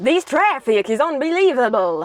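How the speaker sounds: botched, bad, put-on Russian accent attempt. Someone commented asking for the russian accent, so you try it in a bad russian accent. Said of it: "The Russian accent".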